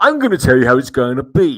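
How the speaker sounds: loud, put-on posh English accent. Recalling the skeleton who used to come along, quoting him in a posh English voice. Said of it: "I think he had quite a posh English voice".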